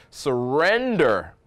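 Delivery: stress on "surrender", drawn out slowly.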